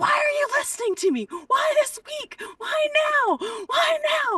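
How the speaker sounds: very high, shrill, loud screaming rant. Retelling a stand-up set gone wrong, imitating own past screaming at the audience. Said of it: "screaming at them".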